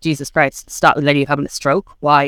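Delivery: normal talking voice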